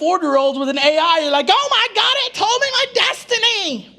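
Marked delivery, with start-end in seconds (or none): 1.5-3.8 acted-out, high, panicky freaked-out voice. Mocking adults who panic over AI, imitating someone freaking out. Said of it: "Some of you are freaking out".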